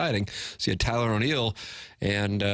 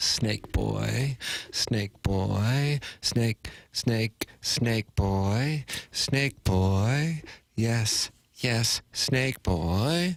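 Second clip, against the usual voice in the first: put-on very slow, hissing little snake voice, boy drawn out. Introducing himself as Snake Boy on the show, in a little snake voice. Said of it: "I sound like a little snake".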